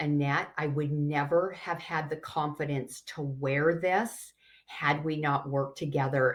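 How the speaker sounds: ordinary talk, nothing marked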